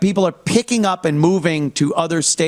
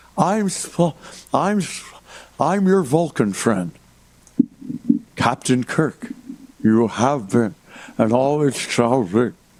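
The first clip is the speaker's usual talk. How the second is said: put-on old man voice talking over dentures, lower pitch; 4 semitones lower than usual. Mocking a speaker by imitating old Spock talking over dentures. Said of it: "talking over his dentures like Spock in the Star Trek movie when he's old".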